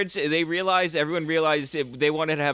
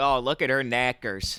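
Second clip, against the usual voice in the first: put-on Minnesota accent, lower; 3 semitones lower than usual. Joking about how a word sounds: put-on minnesota accent. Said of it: "a guy from Minnesota saying tits".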